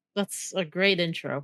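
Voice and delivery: sarcastic tone. Complimenting the other speaker's show intro: sarcastic. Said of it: "sounded sarcastic".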